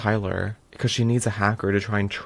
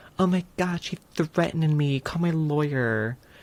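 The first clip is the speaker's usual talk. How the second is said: frantic, high, fake-panic shrieking scream; 6 semitones higher than usual. Recounting a man's reaction when a woman stands her ground, retelling a man screaming. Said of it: "He starts screaming like".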